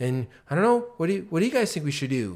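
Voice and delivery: unsure, questioning upturn at the end on "think". Showing leaders how sounding unsure comes across: uncertain rising inflection. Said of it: "Like going up, up, up".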